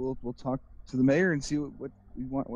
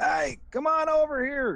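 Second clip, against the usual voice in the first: very high, sing-song, swooping call; 12 semitones higher than usual. Voicing a character who calls passing guards over: calling out. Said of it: "And he calls".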